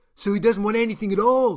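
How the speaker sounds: high, very loud yelling. A man interrupts a doctor's report on her patient: shouting. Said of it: "shouted the man from Gaia".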